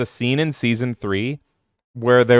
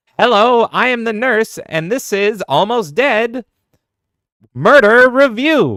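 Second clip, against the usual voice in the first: very high, loud, shrill, weird, drawn-out villainess voice; 11 semitones higher, 6 dB louder than usual. Answering a chat remark by voicing the nurse character again: nurse voice like Harley Quinn. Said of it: "making that nurse talk like a weird mix of Harley Quinn".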